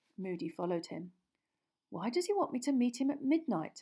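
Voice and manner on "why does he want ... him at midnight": astonished, baffled, high, very surprised. A character asks his companion after a secret invitation, very surprised. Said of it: "very surprised".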